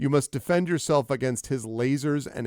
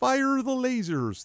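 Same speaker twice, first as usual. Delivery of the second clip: very high frog puppet voice; 11 semitones higher than usual. Repeating the attack call when asked about it: Kermit voice. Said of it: "that would be Kermit".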